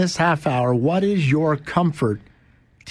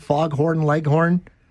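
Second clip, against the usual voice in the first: ordinary delivery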